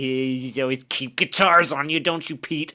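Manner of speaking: sarcastic, snide delivery through fake laughter. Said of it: "he starts, like, fake laughing at him".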